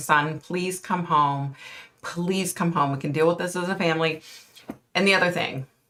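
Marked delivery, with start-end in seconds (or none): 0.0-4.2 put-on pleading, begging tone. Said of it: "I'd be begging".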